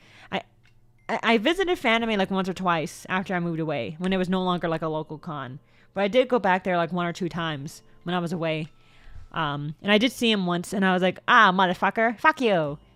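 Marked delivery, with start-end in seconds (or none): 11.3-12.8 put-on sassy attitude. Retelling a run-in with an old acquaintance at a convention: retelling own sassy retort. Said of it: "I meant to sass him".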